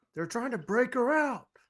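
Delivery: high, alarmed guard voice. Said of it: "they're gonna be like".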